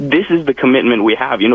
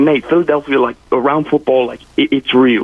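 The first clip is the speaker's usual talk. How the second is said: put-on British accent. Retelling what a man said about soccer, in a British accent. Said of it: "You do a good accent".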